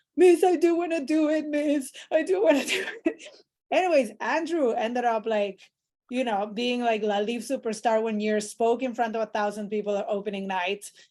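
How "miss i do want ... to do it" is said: high, slow, tearful pleading. Retelling how a hesitant director came back the next day: imitating Andrew crying. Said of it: "He was, like, crying".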